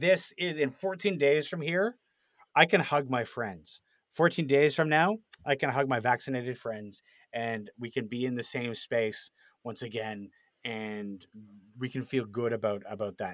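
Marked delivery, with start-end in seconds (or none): none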